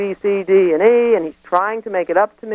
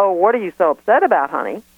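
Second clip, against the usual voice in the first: casual, offhand, dismissive brush-off tone. Describing how a wrongdoer might respond: imitating a casual brush-off. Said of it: "is it a kind of casual".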